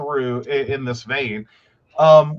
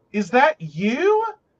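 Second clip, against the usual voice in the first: stunned, very high-pitched, disbelieving voice; 9 semitones higher than usual. Retelling running into a former classmate: retelling a disbelieving question. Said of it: "disbelief tone of".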